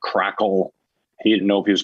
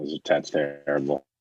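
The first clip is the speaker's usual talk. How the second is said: ordinary talk, nothing marked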